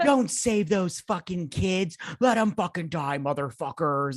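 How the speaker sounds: put-on sudden all-out rage, high-pitched and furious. Retelling a film scene, imitating Amanda Waller's angry rant. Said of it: "got real pissed real quick".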